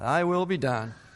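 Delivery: resigned, sighing delivery. Showing how a phrase is commonly said: resigned, with a sigh. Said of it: "It's commonly said with a sigh".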